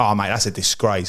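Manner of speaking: ordinary talk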